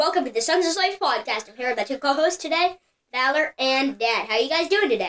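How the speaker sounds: very fast, rattled-off speed-talking. Podcast host welcoming listeners and greeting co-hosts, very fast talking. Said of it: "You spoke really quickly there".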